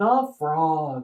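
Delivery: plain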